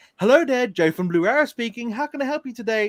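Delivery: put-on work phone-answering voice. Describing answering a call from someone who knows you, the speaker uses a telephone voice. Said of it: "you have your telephone voice".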